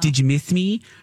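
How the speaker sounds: small, cute, high-pitched voice. Retelling how a partner asks on coming home: imitating partner's cute voice. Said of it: "that's our little cute voice".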